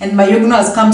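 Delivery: ordinary talk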